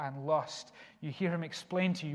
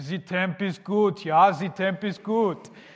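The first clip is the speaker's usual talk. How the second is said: very loud, slow, odd put-on European accent; 2 semitones higher, 10 dB louder than usual. Retelling what a college friend said while running, weird European accent. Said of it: "he'd put on this really weird European accent and say".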